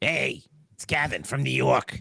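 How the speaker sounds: unhurried, slow, drawn-out put-on buddy voice. Imitating a friend named Kevin from New York: Kevin Smith voice. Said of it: "It also sounds like Kevin Smith".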